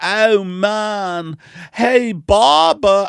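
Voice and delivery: fake British accent, shrill, loud, high, drawn out. A comedian acts out an early stand-up bit about a barbershop, put-on British accent. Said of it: "I took a British accent".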